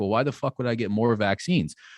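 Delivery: plain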